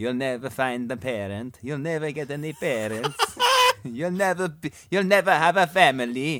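put-on, imitated Italian accent. Imagining what someone is like saying, in a put-on italian accent. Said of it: "That is a flawless Italian accent".

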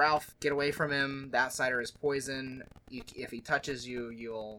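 plain

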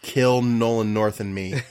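put-on deadpan delivery. Retelling an interview answer given straight to the camera: imitating a deadpan delivery. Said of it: "dead eyes the camera and goes".

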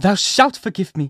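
high, desperate crying-out exclamation. A woman flings herself beside the man who won't forgive her, crying out. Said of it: "cried Hester".

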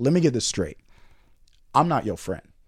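mock stern, firm, no-nonsense lecturing voice. Retelling what the RA said at his first hall meeting: imitating a stern RA. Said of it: "he said very sternly".

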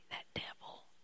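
scared, very hushed whisper, voice dropped right down. Imitating fearful Christians who lower their voice: imitating a fearful whisper. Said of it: "lower their voice, start whispering".

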